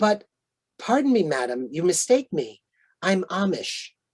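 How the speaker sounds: play-acted gentle, sweet, courteous voice, unaccented. Telling a story, the speaker quotes the Rebbe's reply to a woman: imitating a sweet polite tone. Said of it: "said in a very sweet and polite way".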